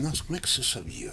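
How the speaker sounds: very soft, hushed, murmured under the breath. Retelling a famous Shakespeare actor's reaction to a TV prank, retelling someone speaking softly. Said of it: "ele falou baixinho assim".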